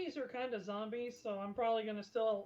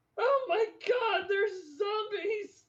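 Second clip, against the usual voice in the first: very loud, very high, shrill, drawn-out scream; 10 semitones higher, 9 dB louder than usual. Voicing the escorted gentleman as he spots zombies: screaming. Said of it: "you just hear the gentleman you're escorting just scream".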